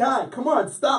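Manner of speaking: exasperated, high, loud pleading.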